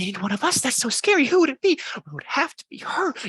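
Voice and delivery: whispering crowd. Voicing a frightened crowd of Pumpkinheads: whispering crowd. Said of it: "You can hear them whispering".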